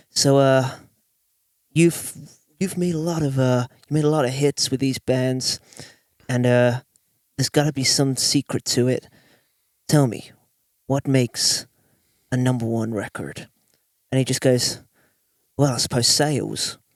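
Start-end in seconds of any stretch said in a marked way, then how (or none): 0.2-13.5 put-on American accent. Retelling what Andrew Scheps asked a hit-making engineer, Andrew Scheps impression, American accent. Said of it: "American in American accent".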